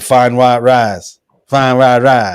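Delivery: mock hardcore Texas accent. Retelling how hardcore Texans say a test phrase: imitating a hardcore Texan accent. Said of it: "true hardcore Texans would say".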